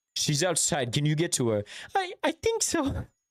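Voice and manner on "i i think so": put-on very high, slow, drawn-out little-kid voice. In a rescue scene, a child answers whether they can reach mommy: child voice. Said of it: "I hate my child voice".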